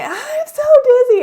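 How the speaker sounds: very high, shrill, very loud shriek. Retelling rolling down a hill with Parker: imitating someone screaming. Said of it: "And I'm just screaming".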